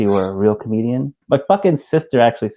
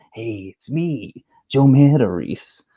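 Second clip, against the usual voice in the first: drawn out slowly in a comic style; 2 semitones higher than usual. Explaining his impressions all sound alike, then doing a Joe Matarese impression. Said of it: "I practiced that Joe Matarese accent or impression".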